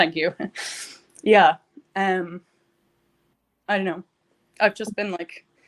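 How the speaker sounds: teary, emotional, halting words spoken while crying. Getting emotional while talking, thanking the other person, crying while talking. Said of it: "You're crying".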